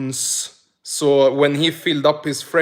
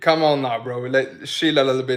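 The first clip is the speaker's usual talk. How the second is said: normal talking voice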